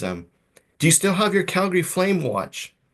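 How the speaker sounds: put-on very high, broad, heavy Ukrainian accent. Retelling a woman they once tested for citizenship asking a question: thick Ukrainian accent. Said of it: "thick Ukrainian accent".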